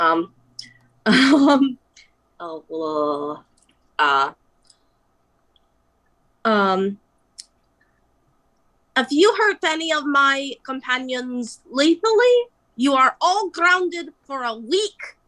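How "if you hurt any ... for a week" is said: high, quick, put-on old grandma accent. Playing a grandmother character looking out over the crowd, in her put-on accent. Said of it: "oh I need to put on my accent".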